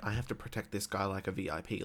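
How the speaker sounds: ordinary talk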